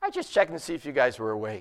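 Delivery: nice and calm, unbothered, low, soft-spoken voice. Retelling what he told passengers after nearly hitting a truck: put-on calm. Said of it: "I just nice and calmly said".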